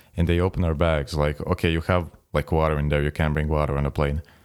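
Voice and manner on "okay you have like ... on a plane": plain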